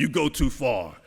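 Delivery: put-on heavy German accent, laid on thick. Retelling how Mater stood up and objected, Mater's thick German accent. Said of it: "in his very thick German accent".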